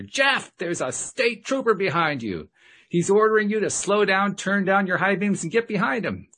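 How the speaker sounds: very high-pitched, panicked, terrified yell. Retelling shouting a warning into the driver's ear: retelling a terrified shout. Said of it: "I shouted as loud as I could in his ear".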